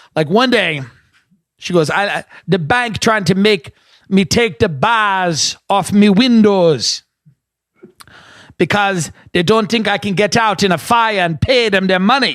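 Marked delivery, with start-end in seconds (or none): 1.9-12.4 put-on Caribbean West Indian accent, bars drawn out. Retelling what a woman told the speaker about her bank, West Indian accent. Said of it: "West Indian".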